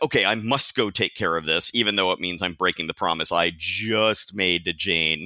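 usual speaking voice

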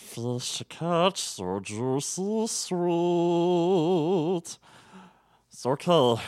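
very slow, creature-like goblin voice, throaty and drawn out. Trying a line from the movie, the speaker does a goblin voice. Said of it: "I'm doing my fucking Goblin voice".

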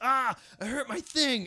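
high, loud mock scream of pain.

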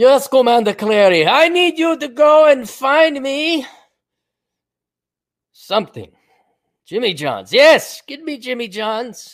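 put-on Soviet-accented villain voice. Playing a Soviet Bond villain giving orders, Soviet Bond villain accent. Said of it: "I'll talk with an accent".

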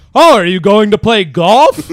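shouting, very high pitch and very loud. Describing their dad's impressions, the speaker imitates dad yelling. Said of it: "dad, you're just yelling".

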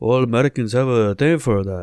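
vague, unclear put-on Polish accent. Responding to a name that sounds Polish, in an attempted Polish accent. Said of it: "I don't know what accent that was, but let's pretend it was what Polish people sound".

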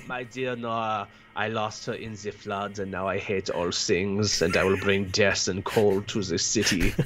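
put-on low, creepy voice with an Austrian accent. Suggesting Christoph Waltz for a role, the speaker performs a line as him. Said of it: "Because he's creepy and Austrian".

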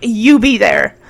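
bossy, commanding voice. Retelling a scene where a boy invites a girl: imitating an order. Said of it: "He's ordering her".

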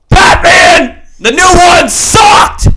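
yelling loudly. Arguing about the new Batman movie with another speaker: screaming. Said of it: "There's no need to scream".

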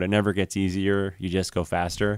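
ordinary talk, nothing marked

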